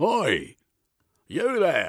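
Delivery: very high, loud, swooping call-out voice. A policeman walks out into the garden, calling out to someone.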